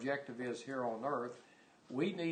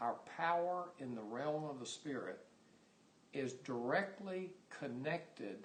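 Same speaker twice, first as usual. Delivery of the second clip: slow, deliberate reading, each word spaced out; 4 dB quieter than usual. Reading a quoted sentence aloud to another speaker: saying it slowly. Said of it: "I'm gonna say it slow".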